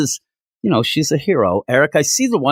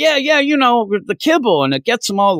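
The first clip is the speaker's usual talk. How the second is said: thick, broad put-on Southern accent, very high; 9 semitones higher than usual. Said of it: "a thick Southern accent".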